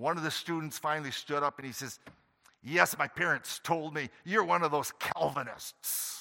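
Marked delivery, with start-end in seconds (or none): 2.6-6.2 put-on voice dripping with disgust and contempt. Recalling teaching in the Philippines, he quotes a student who stood up, mimicking disgust. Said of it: "You could almost hear the disgust in his voice".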